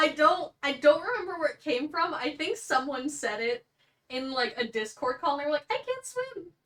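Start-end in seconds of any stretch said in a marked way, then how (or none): 5.7-6.5 very high, cute, synthetic-sounding voice. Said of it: "you kind of said that like Hatsune Miku".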